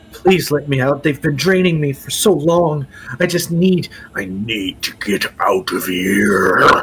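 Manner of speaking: eerie, creepy creature voice. In a tabletop game, a trapped creature begs the players to free it, creepy creature voice. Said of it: "that voice is creepy".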